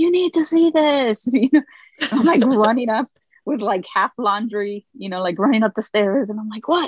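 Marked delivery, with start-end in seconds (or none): 0.0-1.3 mild, high-pitched, urgent shouted yell. A parent retells their kid calling them to see a drawing: retelling a full-lungs scream. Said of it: "like screams at the top of his lungs".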